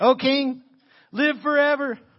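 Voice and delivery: muffled, very high, drawn-out voice. Reading verse 21, voicing Daniel answering the king, muffled from behind the rock. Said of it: "little special effects for you there".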